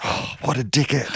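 hushed, whispered aside under the breath. Quoting what someone whispered to him during a story, retelling a whisper. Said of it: "Billy just whispered to me".

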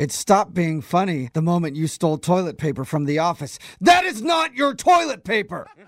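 heated, fed-up anger, loud and rising. In a scene, one character confronts another: angry. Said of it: "you need to calm down".

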